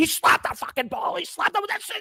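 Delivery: mock very high, frantic screaming outburst. Recalling watching a baseball game, reenacting screaming at the tv at the umpire. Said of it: "screaming at the T V".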